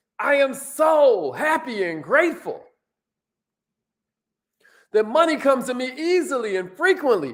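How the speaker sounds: slow, firm, said with full conviction. Leading listeners in an affirmation to repeat: saying it like you mean it. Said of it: "Say it like you mean it".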